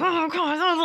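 high-pitched screaming. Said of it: "I'm screaming into my jacket".

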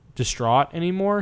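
ordinary delivery

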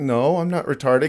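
ordinary talk

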